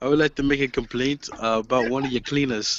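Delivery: put-on British accent. Acting out a phone call as the caller, in a put-on British accent. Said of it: "I can like speak with a British accent".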